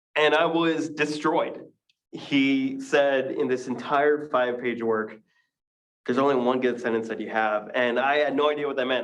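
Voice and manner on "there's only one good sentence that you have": normal talking voice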